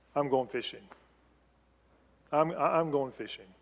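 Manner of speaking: discouraged, done tone. Speaker shows how a line might be said, in a fed-up tone. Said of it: "the tone of voice could be".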